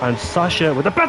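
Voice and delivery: ordinary talk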